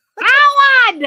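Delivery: screaming holler, high-pitched and loud. Asked if you can do Howard's mother, Howard's mother voice. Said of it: "she was always screaming".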